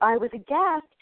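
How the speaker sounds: ordinary delivery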